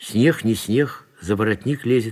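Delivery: ordinary delivery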